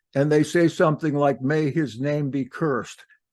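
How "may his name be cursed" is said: plain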